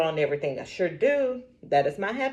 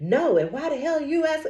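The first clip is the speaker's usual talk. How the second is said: put-on irate, angry outburst, high-pitched; 7 semitones higher than usual. Retelling a customer's reply on the phone: imitating a customer going off. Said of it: "she just went off".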